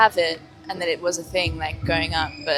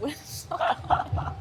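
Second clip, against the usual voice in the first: slow, whispered, stunned laugh of disbelief. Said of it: "We're like".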